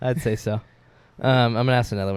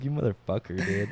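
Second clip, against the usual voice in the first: mock furious, angry, pissed-off cursing outburst; 2 semitones lower, 5 dB quieter than usual. Retelling own reaction to unwanted messages: imitating own angry outburst. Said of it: "I was so pissed".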